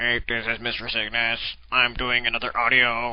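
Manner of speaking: flat, synthetic, low, monotone robotic drone voice. Imagining speaking through a device after losing his voice, robot voice. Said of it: "get one of those robot voices".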